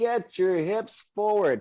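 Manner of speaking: very high, high-pitched screaming. Retelling screaming at a son during his track race: retelling own screaming. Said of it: "I'm screaming at him".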